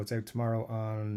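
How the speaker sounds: plain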